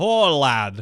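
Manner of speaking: put-on full-on, strong Scottish accent. Repeating the line when another speaker asks: Sean Connery voice. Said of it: "Wait, what was that?".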